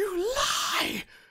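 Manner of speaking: very high, very loud shrieking scream at full voice. A prisoner manacled in a cart calls after those shutting the door, screaming.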